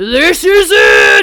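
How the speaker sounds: very loud, booming, screamed shout. Describing a man on a ship in icy rain, retelling his scream across the boat. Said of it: "he like screams it across the boat".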